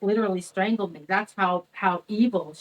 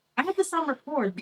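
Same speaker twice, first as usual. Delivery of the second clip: usual speaking voice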